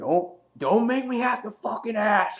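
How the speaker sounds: very high-pitched, shrill, furious delivery. Recapping a TV scene where Negan wants in, imitating Negan's angry threat. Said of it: "He's getting all pissed off".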